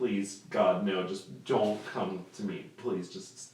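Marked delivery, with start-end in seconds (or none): none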